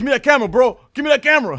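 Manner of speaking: put-on angry outburst. Retelling a man on a street corner going off at a cameraman: imitating an angry outburst. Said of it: "the dude was like, went off".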